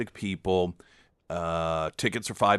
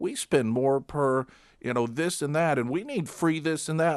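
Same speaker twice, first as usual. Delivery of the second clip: pitched-up commercial announcer delivery; 7 semitones higher than usual. Mocking the ads one hears about medicine: imitating a political ad. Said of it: "you hear these ads".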